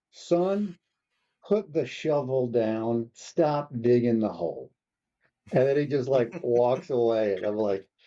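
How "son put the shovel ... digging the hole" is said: slow put-on Southern American drawl. Speaker retelling what a sergeant major told them: imitating a southern drawl. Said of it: "he's got a southern drawl".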